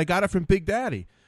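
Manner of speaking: ordinary talk, nothing marked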